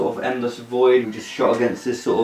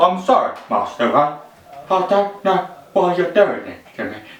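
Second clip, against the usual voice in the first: put-on, higher-pitched British film-star voice; 6 semitones higher than usual. Demonstrating the voice from the film, a Michael Caine impression. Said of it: "That's my Michael Caine, apparently".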